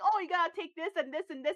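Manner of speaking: put-on New York accent, helpful tone. Retelling how friendly locals gave directions on a trip: imitating a new york accent. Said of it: "they're with their New York accent".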